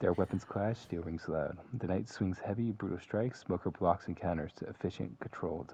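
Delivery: ordinary delivery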